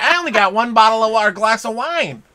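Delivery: shrill, loud, pointed, accusatory tone. Imitating the other speaker to their face, in a mimicking shrill accusatory tone. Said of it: "I don't talk shrilly like that".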